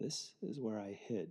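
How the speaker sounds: hushed, very quiet, soft voice. Retelling what a guide said by the well where he hid, in a soft voice. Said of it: "in a soft voice said".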